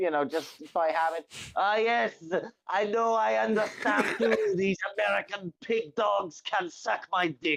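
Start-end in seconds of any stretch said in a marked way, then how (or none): 1.5-7.6 comedic, jokey put-on French accent. Speaker imagines interviewing a guy from French Canada, slipping into a comedic French accent. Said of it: "a comedic French accent".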